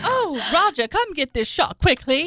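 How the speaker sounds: transatlantic accent. Joking about the accent's origin, playing a scared yacht passenger: mid-Atlantic accent. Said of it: "It's called transatlantic accent or mid-Atlantic accent".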